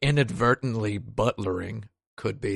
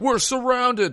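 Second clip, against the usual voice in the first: put-on high yell. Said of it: "They're just, like, yelling".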